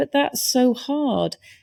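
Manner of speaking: small, high, drawn-out little lone voice. Retelling an audience member's remark at a conference: imitating a small little voice. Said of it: "this little voice just went".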